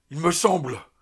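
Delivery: loud, frightened outcry of a man losing nerve. Lieutenant Martinez, at night with his companion José, crying out. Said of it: "s'écria Martinez".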